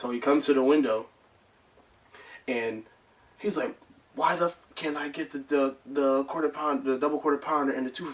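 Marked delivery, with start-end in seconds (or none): 4.1-8.1 irate, angry voice, stumbling and tripping over words. Retelling what a customer said at the window: mimicking an angry customer. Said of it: "because he's still angry".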